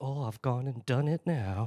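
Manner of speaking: put-on smug, cheeky voice. Mocking a cheeky quote followed by a smirk: smug cheeky Shelby Foote impression. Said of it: "smirk and look down of".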